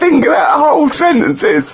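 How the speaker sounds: heavy laughter.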